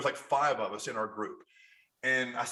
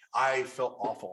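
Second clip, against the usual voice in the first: ordinary talk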